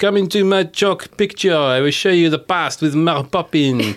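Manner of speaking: loud, hammed-up, bad French accent. Riffing on casting, play Le Bert the chimney sweeper as Steve Martin in a bad French accent. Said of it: "Doing a bad French accent".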